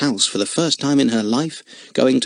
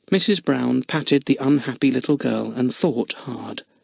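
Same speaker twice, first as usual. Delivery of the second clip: ordinary delivery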